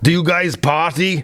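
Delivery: horrible, thick, badly done Austrian accent. Retelling what a man at a party asked mid-conversation, in a horrible thick accent. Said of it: "I'm just going to do a horrible one".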